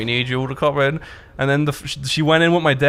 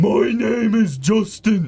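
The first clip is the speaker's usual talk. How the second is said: higher, odd, peculiar schoolboy way of talking; 7 semitones higher than usual. Telling about a guy from school, the speaker shows how he talked: imitating a classmate's way of talking. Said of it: "talked like this".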